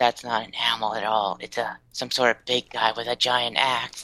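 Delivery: soft half-whisper, under the breath. Player's character back with the others after closing a door, half-whisper. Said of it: "I whisper".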